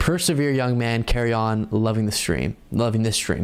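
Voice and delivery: ordinary delivery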